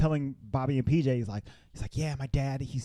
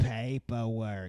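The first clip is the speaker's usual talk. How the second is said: put-on lady voice, lower; 3 semitones lower than usual. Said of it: "She sounded like Roz from Monsters".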